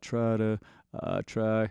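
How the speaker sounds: soft, slow, gritty creaking vocal fry onset. Demonstrating vocal fry at the start of a phrase: creaky vocal fry. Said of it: "creaky door type of a sound".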